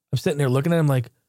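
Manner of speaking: normal talking voice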